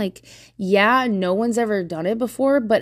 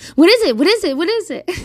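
very high, loud, nagging, pestering voice; 9 semitones higher, 5 dB louder than usual. Imitating someone pestering an upset person: imitating pestering questioning. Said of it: "nobody likes it when you're just like".

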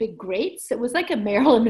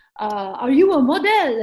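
put-on slow, raised, thick French accent; 4 semitones higher, 5 dB louder than usual. Retelling a man running over to ask the speaker a question: thick French accent. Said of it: "with a heavy, thick French accent speaking English".

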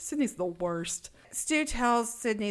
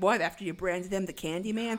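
ordinary talk

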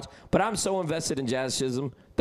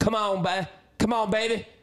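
put-on pitched-up Delco accent; 7 semitones higher than usual. Imitating two New Yorkers at a game, in a Delco accent. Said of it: "Like that type of Delco fucking accent".

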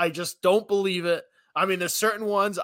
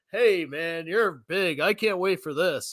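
put-on robotic coach voice. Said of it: "a robot to be a head coach".

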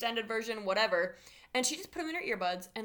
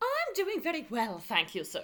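put-on sing-song English accent. Playing a guest on a made-up talk show, answering the host in a put-on English accent. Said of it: "I don't know why you have an English accent".

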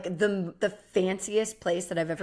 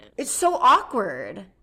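very loud, practically screaming the words; 3 semitones higher, 6 dB louder than usual. Reacting to an awkward moment in conversation: screaming. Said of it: "Sorry, I'm literally screaming".

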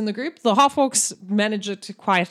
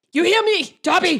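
pitched-up orc voice, close to the ear; 8 semitones higher, 4 dB louder than usual. Voicing an orc spellcaster speaking right by a player's ear: voicing an orc spellcaster. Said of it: "and he goes".

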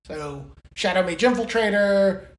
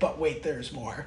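mocking, sarcastic delivery; 5 semitones lower, 9 dB quieter than usual. Replaying a card reading with a sarcastic tone. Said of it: "it was a sarcastic".

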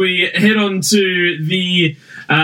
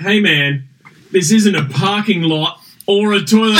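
plain

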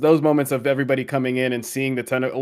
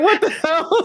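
put-on very high, freaked-out panicked outburst. Retelling a favorite animated episode moment, imitating Stark freaking out. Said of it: "freaking out".

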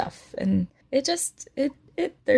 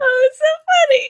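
very loud, very high, shrieking through laughter; 9 dB louder than usual. Laughing at the word Crimbo: laughing so hard while talking. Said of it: "She's crying, guys".

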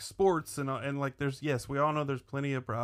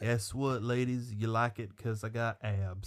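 put-on charming southern drawl, pitched lower; 4 semitones lower than usual. Mocking an actor's autopilot charm in a rom-com: Matthew McConaughey impression, autopilot charming. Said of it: "Matthew McConaughey doing his, like, autopilot charming thing".

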